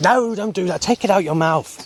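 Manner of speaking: high-pitched put-on Chinese accent. Quoting what a woman said, in an imitated Chinese accent. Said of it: "she'd have that sort of accent".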